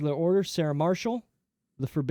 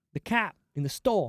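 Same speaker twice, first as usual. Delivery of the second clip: mock, imitated Boston accent; 2 semitones higher than usual. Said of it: "You sounded super Boston".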